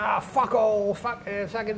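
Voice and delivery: put-on high-pitched British voice. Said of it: "he says, because he's British".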